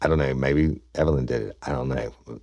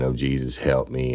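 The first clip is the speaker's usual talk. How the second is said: mock crying, slower. Retelling how a woman fell down on the floor, imitating her crying. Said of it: "crying and".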